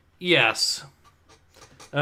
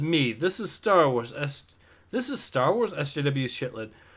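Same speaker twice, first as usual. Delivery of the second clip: ordinary talk, nothing marked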